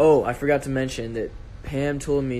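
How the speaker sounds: normal talking voice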